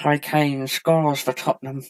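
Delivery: footballer voice, played straight and sincere. Doing an impression of Harry Kane for the other speaker: Harry Kane impression. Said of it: "That's my Harry Kane impression".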